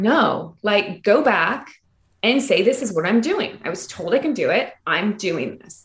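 ordinary talk, nothing marked

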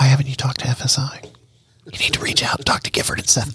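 hushed, whispered voice. Host talking on a show in a dark room, whispering. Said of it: "I don't know why I'm whispering".

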